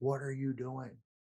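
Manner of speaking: play-acted held-back scream, kept small and mild. Retelling how his wife found him in the basement: imitating wife screaming. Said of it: "she screams at me".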